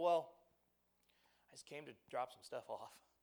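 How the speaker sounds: low, hushed, sheepish tone with throat-clearing. Retelling Jimmy's reply to a parent's accusation, mock-sheepish while clearing his throat. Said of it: "Jimmy says sheepishly, clearing his throat a little".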